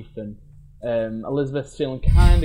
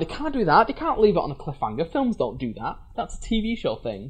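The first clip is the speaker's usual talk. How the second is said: stunned, incredulous tone with swooping pitch; 4 semitones higher, 3 dB quieter than usual. Retelling leaving the cinema shocked by a cliffhanger: retelling being baffled. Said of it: "I left being like".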